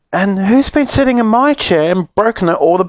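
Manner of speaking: very high, squeaky, tearful voice. Reading a story aloud, voicing the baby bear, squeaky and tearful. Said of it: "squeaked the baby bear in tears".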